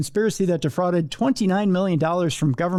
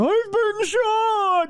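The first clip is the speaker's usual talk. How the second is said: very high, moose-like crying voice. Retelling how Todd Benkowski cried out after being shot: Todd Benkowski's moose-like voice. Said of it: "his moose-like voice going".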